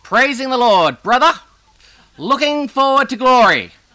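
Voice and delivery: put-on very loud, very high old-man voice exclaiming. Speaker recounts what an old man would say every time, surprisingly loud voice. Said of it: "with a surprisingly loud voice".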